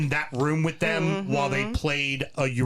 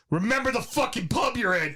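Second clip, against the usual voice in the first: voice raised high and loud; 7 semitones higher than usual. Retelling how Simon warned the speaker: imitating a loud warning. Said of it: "Simon very loudly just went".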